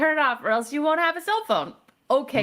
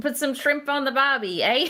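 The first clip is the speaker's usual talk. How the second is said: bad, clumsy put-on Australian accent; 2 semitones higher than usual. Asked to do an australian accent, trying one out: put-on australian accent. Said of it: "let's hear some Australian, mate".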